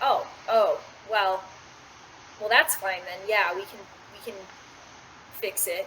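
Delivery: relieved, visibly relaxing, relief coming in. A game master voices a woman after a successful persuasion check, relaxing a little. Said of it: "she kind of like visibly relaxes".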